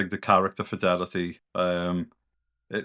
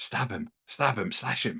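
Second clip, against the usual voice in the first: soft murmur under the breath. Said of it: "my voice just going".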